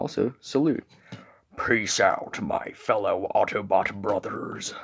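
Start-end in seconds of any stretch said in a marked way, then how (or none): 1.6-4.7 slow, soft, drawn-out hillbilly drawl. Narrating the Autobot's salute, the speaker attempts a failed Optimus Prime impression. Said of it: "that just sounded like some hillbilly".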